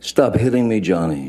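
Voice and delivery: upset, frantic, freaked-out, high-pitched cry, acted out. Recounting what a woman screamed, imitating a freaked-out, upset scream. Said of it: "she's screaming in in her best um, freaked out, upset voice".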